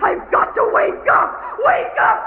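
frantic, high-pitched cry. Claire, dreaming, tries to wake herself from a nightmare, screaming. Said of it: "Claire, stop screaming".

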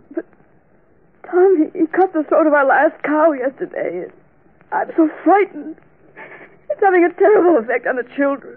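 sobbing, tearful crying voice. A woman answers the man comforting her, crying. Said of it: "Please stop crying".

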